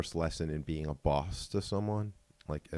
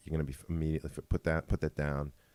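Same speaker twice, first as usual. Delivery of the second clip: ordinary talk, nothing marked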